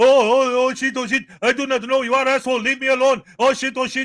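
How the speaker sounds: loud, high, fake Indian accent. Describing what SGV News says at churches, the speaker quotes him in a fake Indian accent. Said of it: "he does a fake Indian accent and goes".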